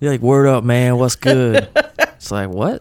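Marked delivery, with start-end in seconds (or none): 0.2-1.7 exaggerated, loud, put-on slang-heavy dialect.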